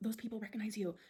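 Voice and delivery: imitated whisper. Retelling what a mother whispered in a shop: imitating a whisper. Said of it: "my mom was whispering to me".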